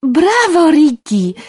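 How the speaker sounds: high, loud calling out. She cheers someone on, calling out. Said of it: "Zawołałam".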